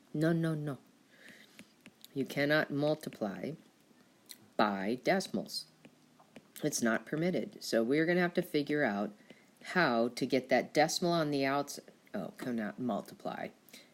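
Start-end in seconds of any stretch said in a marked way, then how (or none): 0.1-0.8 mock toddler voice, higher. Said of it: "Just like a little toddler".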